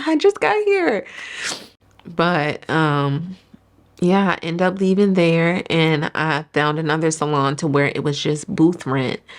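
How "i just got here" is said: much higher, startled voice. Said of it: "It's just like".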